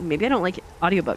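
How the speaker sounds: ordinary delivery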